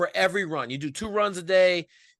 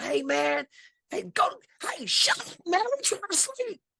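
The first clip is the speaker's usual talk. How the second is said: very high, half-shouted mild yell; 11 semitones higher than usual. Retelling yelling out the window at loud kids: imitating own yell. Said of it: "So I yelled out the window".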